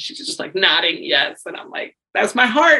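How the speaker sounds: ordinary talk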